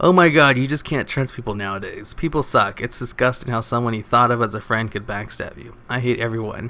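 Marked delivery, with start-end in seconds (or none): none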